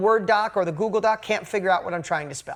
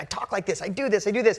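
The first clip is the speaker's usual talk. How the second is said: put-on excited voice. Retelling what a man named Tom said: imitating someone excited. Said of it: "And then he got excited".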